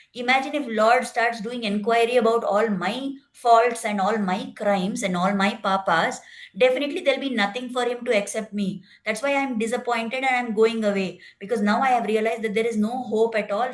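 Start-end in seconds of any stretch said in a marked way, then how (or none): none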